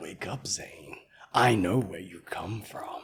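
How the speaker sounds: very low, very soft, hushed deep put-on voice. Repeating a line someone just said to show its delivery, in a deep voice. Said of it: "When I do that deep voice".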